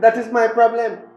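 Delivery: talking loudly. Arguing back at the other speaker: raised voice. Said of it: "Don't raise a voice at me".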